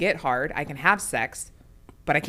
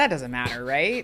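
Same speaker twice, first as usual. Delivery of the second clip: joking sarcasm, mock-dismissive and brushing it aside; 3 semitones lower than usual. Joking that a partner's enjoyment in sex doesn't matter: sarcastic joking. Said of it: "I'm just being sarcastic".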